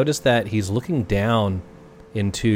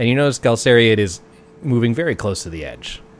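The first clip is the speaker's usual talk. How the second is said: ordinary talk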